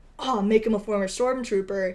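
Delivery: plain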